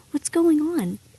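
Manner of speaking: gentle, soft, hushed, soothing half-whisper. Retelling a dad's words on coming into the room: imitating a soft calming half-whisper. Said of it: "And he'd just whisper".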